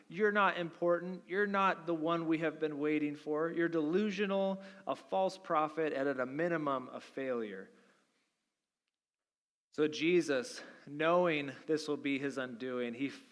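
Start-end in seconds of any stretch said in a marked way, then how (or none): none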